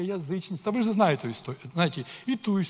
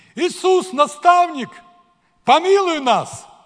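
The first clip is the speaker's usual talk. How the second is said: very loud, very high, drawn-out pleading call; 9 semitones higher, 12 dB louder than usual. Showing how they called out to Jesus, in a loud voice, not shouting. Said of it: "Они примерно так говорили".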